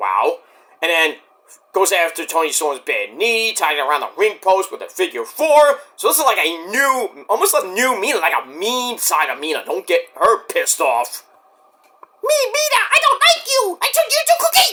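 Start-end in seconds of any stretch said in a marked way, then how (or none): 12.2-14.7 very high-pitched, menacing cartoon brute voice. Acting out a wrestler's threat, slipping into Majin Buu voice. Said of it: "no, that's Majin Buu".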